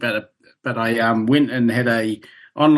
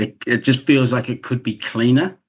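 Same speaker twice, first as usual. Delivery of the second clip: ordinary delivery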